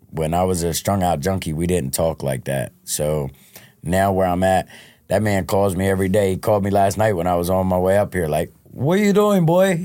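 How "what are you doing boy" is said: put-on very high voice with thick Puerto Rican accent. Retelling how that man called him last night, heavy Puerto Rican accent. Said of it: "He got a heavy, heavy Puerto Rican ass".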